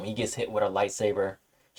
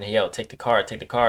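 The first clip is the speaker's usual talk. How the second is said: plain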